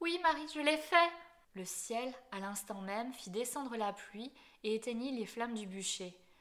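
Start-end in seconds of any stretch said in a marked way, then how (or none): 0.0-1.1 cried-out, raised, high-pitched outcry. A woman suddenly regaining her voice calls out to marie: cried out. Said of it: "elle cria".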